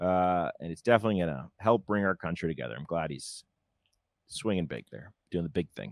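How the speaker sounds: low, quiet, plainly sarcastic tone. Commenting on a politician showing up, before being told it sounds sarcastic: sarcastic. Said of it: "I know you're being sarcastic".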